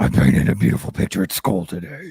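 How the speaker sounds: put-on child's voice turned deep, possessed, demonic. Retelling a child repeating herself, ignored: imitating a possessed child's voice. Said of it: "it was a complete possession".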